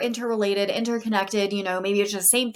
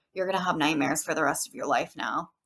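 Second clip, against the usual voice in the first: put-on, utterly flat, low, totally deadpan delivery; 5 semitones lower, 4 dB quieter than usual. Retelling a remark made to a young kid, retelling a deadpan remark. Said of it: "totally deadpan".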